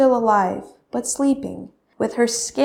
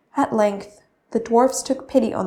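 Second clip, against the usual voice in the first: ordinary delivery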